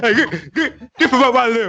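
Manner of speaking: mock high, loud yell, laughing.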